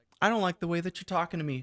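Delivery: polite customer-service voice. Retelling how she answered calling customers, very customer-servicey voice. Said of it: "in her very customer servicey voice".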